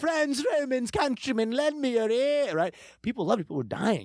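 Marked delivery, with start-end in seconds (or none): 0.0-2.5 really put-on, affected British accent, very high. Retelling reading a speech aloud in class: affected British accent. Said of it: "really affectatious British accent".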